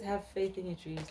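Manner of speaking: normal talking voice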